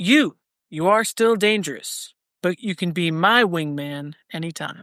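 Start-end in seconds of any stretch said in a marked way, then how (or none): none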